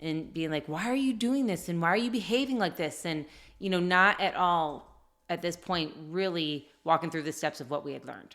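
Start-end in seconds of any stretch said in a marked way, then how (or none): 0.7-3.1 put-on, mild, frustrated, exasperated half-shout. Retelling yelling at a child who had made a mistake: imitating own past yelling. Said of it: "I just started yelling".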